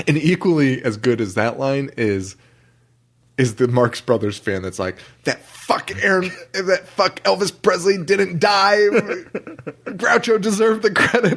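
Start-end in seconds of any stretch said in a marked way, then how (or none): 5.2-11.4 put-on pitched-up, angry, pissed-off ranting. Quoting a Marx Brothers fan from a favorite scene: imitating a pissed-off fan. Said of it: "he was pissed off".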